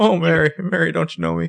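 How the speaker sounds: very high, rough, creaky villainous rasp. Quoting a homeless guy from a show: evil Jimmy Stewart voice. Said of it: "our impression of this guy is, like, evil Jimmy Stewart".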